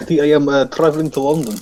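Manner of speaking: put-on Russian accent. In a role-play, a Russian answers what they are doing here, Russian accent. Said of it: "What do you Ruski's got interest".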